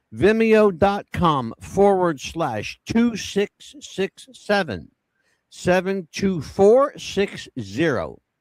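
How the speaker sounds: slow dictation. Giving viewers a web address to write down, said slowly. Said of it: "I'll do it slow".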